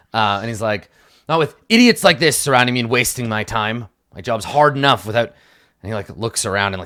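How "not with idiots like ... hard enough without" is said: cross, angry put-on character voice. Voicing a character who snaps at players, voicing an angry character. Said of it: "gets angry".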